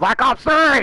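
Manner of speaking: shouting. Cutting in to correct a friend mid-conversation, yelling. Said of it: "Why are you yelling".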